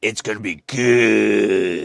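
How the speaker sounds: low, very slow, drawn-out monster voice. Asked why they suddenly speak monster voice, the speaker explains: Rachael Ray monster voice. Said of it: "why you speak monster voice all of a sudden".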